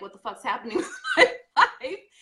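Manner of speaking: high, loud, laughing outburst in exasperated disbelief.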